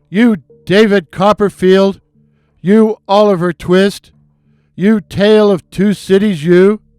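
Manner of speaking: furious, loud, drawn-out angry yelling. Recounting a friend shouting at another driver at the lights; retelling a friend's yell. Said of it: "started yelling".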